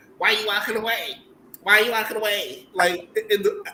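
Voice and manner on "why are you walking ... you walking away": mock annoying, high, loud, confrontational barking. Recounting how she barked at another woman in a scene, imitating her annoying, barking voice. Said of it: "then she's barking at her".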